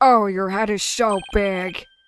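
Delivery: loud, big, drawn-out comic drawl, every word stretched. Voicing a game character with a Jennifer Coolidge voice. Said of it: "Jennifer Coolidge's voice for the funny".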